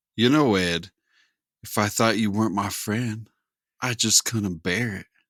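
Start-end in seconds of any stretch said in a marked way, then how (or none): 1.7-5.1 soft, pillowy voice, quieter. Delivering a line to a friend in a soft-boy voice. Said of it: "Why are you saying it like that?".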